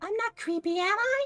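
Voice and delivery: put-on tiny, very high-pitched girlish voice. Voicing a little girl who appears at a character's elbow: little girl voice. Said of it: "there's a little girl standing there".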